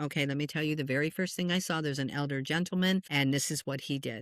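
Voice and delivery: ordinary delivery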